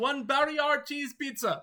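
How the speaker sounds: yelling in character. Voicing a character who screams about cheese pizza: screaming in character. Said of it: "And sort of screams".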